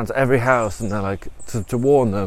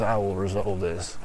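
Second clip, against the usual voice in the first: sudden put-on deep voice, quieter; 4 semitones lower, 7 dB quieter than usual. Retelling what she says after pulling herself together, in a sudden deep voice. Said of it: "i don 't know why she's got suddenly a deep voice".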